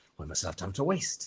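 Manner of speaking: fake, wobbly, iffy British accent. Imitating an actor's iffy British accent as Sherlock Holmes: Robert Downey Jr.'s iffy British accent. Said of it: "his accent is a little, like, iffy as Sherlock Holmes".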